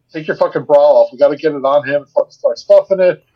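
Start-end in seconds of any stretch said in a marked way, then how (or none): none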